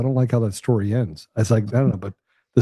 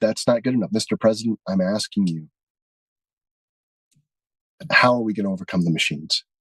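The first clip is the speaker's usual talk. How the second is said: woman's voice, upset and pressing hard, insistent; 2 semitones lower than usual. Retelling a woman's words to the president, imitating someone upset. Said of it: "Now she's getting upset".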